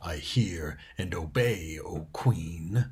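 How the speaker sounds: low, very slow, drawn-out wolf growl. A narrator reads a wolf answering its queen; growling wolf voice. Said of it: "growled the wolf".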